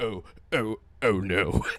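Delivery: comical, very low, comically deep robot voice.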